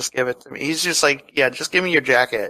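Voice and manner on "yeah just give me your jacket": put-on coldly calm villain voice. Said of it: "that cold calmness of knowing that that's what he's gonna do and demanding his jacket".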